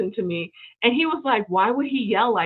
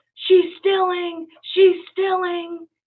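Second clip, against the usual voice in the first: play-acted very high, accusing yell at top of lungs; 10 semitones higher, 4 dB louder than usual. Telling a story, the speaker imitates a man filming her with his phone: retelling a man's yell. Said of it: "he yells at the top of his voice".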